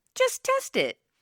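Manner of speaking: very high-pitched voice. Quoting himself giving advice to sellers, in a high-pitched voice. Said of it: "the high-pitched voice I just said that in".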